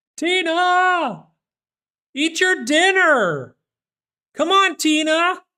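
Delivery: shrill, very high, drawn-out yell. Host calling out to someone while on the mic, yelling. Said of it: "Sorry for yelling into the mic".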